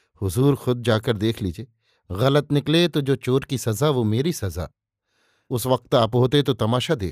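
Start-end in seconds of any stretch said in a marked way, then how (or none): none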